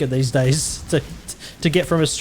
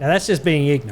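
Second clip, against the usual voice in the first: normal talking voice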